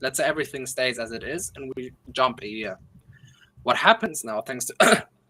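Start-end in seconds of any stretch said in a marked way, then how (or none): 3.6-5.0 voice breaking and cracking in the middle of the phrase. Walking through a price scenario for listeners, voice cracking. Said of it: "my voice cracked".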